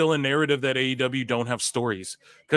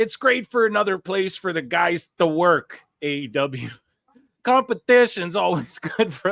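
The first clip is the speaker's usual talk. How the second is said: put-on higher Minnesota accent; 5 semitones higher than usual. Reading out a wrestler's quote about competition: Scott Steiner in Minnesotan accent. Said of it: "A Minnesotan accent".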